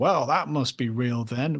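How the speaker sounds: put-on mock-sarcastic narrator tone. Imitating a show's commercial narrator, mock-sarcastic narrator tone. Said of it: "with a sarcastic tone".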